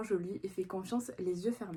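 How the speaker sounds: ordinary talk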